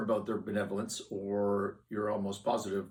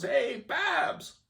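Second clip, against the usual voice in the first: play-acted very high shout; 4 dB louder than usual. Retelling how a guy at a loud jazz club called out to Babs, retelling a yell across a bar. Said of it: "He's yelling across the bar".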